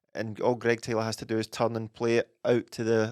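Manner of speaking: usual speaking voice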